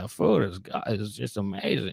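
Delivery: imitated manner of speaking. Retelling what someone recommended about a restaurant: imitating how he said it. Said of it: "that's how he was kinda saying it".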